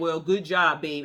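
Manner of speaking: put-on flat, dismissive tone. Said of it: "he said it like real".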